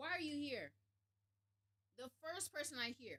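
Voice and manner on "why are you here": irritated, annoyed man's voice. Retelling a man questioning recruits down the line: imitating an irritated man. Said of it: "He's irritated already".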